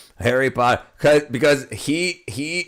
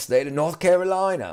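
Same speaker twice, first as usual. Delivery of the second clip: clumsy, bad put-on English accent; 3 semitones higher than usual. Telling a story, slipping into an attempted english accent. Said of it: "your attempts at an English accent?".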